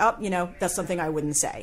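normal talking voice

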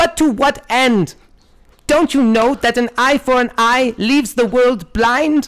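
put-on very high, frail, decrepit old woman voice. Telling a squirrel story, voicing the old squirrel lady, decrepit old woman voice. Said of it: "imagine like a really decrepit woman".

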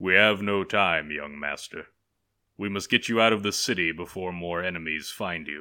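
solemn, grave, serious, weighty tone. A samurai answers the young master after a fight, solemnly. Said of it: "One of the samurai was leaning over him, / he asked. / the samurai solemnly answered".

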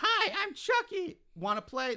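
put-on very high little kid voice, chirped like a toy doll. Retelling a horror scene where the doll speaks, in Chucky's little kid voice. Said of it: "in the little kid voice".

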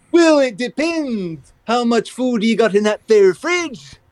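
dopey cartoon moose voice. Speaker voicing a requested conversation between Shaggy and Bullwinkle, Bullwinkle voice. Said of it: "a conversation between Shaggy and Bullwinkle".

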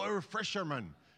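accent from Cornwall. Asking the crowd to say a word the way people in Cornwall do, Cornish accent. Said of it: "say it with a Cornwall accent".

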